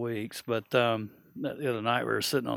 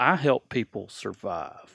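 mock child voice speaking seriously. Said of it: "he was all, in all serious".

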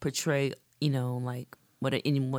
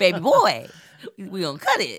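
distinctive high, sing-song put-on voice with swooping pitch; 5 semitones higher, 4 dB louder than usual. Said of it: "Keep coming out with that [name] voice".

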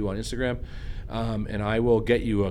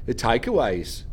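put-on Australian accent on the word takeaways. Mimicking how someone said a word: Australian-sounding accent. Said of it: "You had an accent. You went, the takeaways. ... More like Australia".

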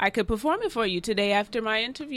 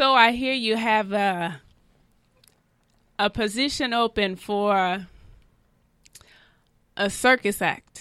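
acted delivery in a put-on Jamaican accent. Playing a job applicant asking about a circus act opening, in a Jamaican accent. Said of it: "Jamaican accent".

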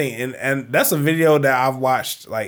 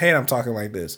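plain

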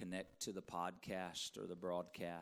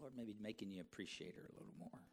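ordinary delivery

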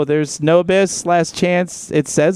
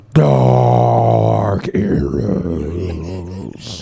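very low, rough, rasping demonic voice; 11 semitones lower than usual. Asked to say a username in Satan's voice, the speaker answers in a Satan voice. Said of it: "can you say Dark Eros in Satan?".

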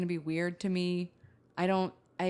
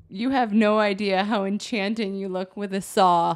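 very loud, fighting back a laugh; 8 dB louder than usual. Quoting a man's compliment to a woman, trying not to laugh. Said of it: "I got to say this without laughing".

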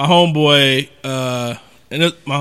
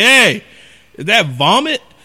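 put-on strong, heavy country accent, pitched up; 8 semitones higher than usual. Retelling what a man said on opening the door, strong country accent. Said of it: "he has like this strong like country accent".

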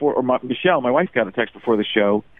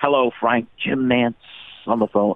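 calm, composed golf announcer voice. Retelling a voicemail from the caller: Jim Nance impression. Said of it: "the time Jim Nance called me".

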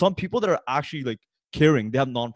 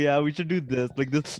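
mock, oddly overconfident tone; 2 semitones higher, 3 dB quieter than usual. Imitating another speaker's idea, said with weird confidence: imitating someone's weird confidence. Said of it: "He said it with so much, like, weird confidence too".

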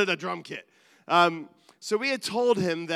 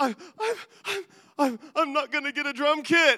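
put-on high sobbing, stuck stammering on first word; 7 semitones higher than usual. Retelling what a child said after bursting into tears: imitating a child sobbing.

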